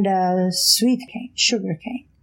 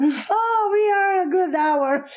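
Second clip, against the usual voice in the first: put-on Portuguese accent, much higher; 10 semitones higher than usual. Speaker retelling their brother's reply while he was driving, portuguese accent. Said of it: "he said in his accent, Portuguese accent".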